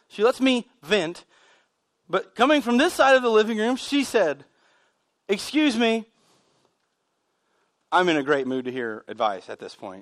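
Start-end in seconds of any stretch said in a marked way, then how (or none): 5.3-10.0 acted heavy sarcasm, dropped very low, swooping. Retelling what she said while the speaker vented, imitating her sarcastic remark. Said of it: "That's sarcasm".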